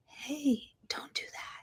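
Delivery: soft, unvoiced little whisper.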